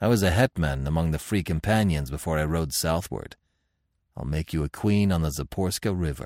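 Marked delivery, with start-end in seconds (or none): none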